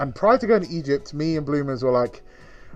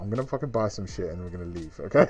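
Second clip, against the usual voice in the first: hushed stage whisper, aside; 7 semitones lower, 6 dB quieter than usual. Retelling half-whispering to a companion during a sales presentation: retelling a half-whisper. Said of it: "I whispered to her".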